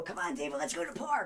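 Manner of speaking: put-on keen, eager, worked-up excited tone. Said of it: "get excited".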